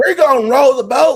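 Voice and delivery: put-on Southern US accent, shrill, booming, very loud. Recounting how a dude talked, imitating his southern accent. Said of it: "this dude had a southern accent".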